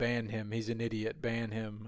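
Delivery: ordinary talk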